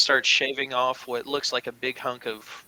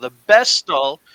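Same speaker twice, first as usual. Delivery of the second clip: raised voice, yelling a little louder; 3 semitones higher, 11 dB louder than usual. Voicing a hippo butcher catching somebody else's attention: yelling a little louder. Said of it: "as he seems to yell a little louder".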